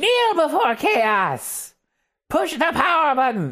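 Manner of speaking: mock very high, shouty, swooping yell. Describing a store game display that yells at passersby: imitating yelling Disney Infinity display. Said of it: "It yells at you".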